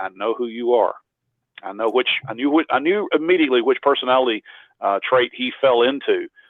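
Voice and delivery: ordinary talk, nothing marked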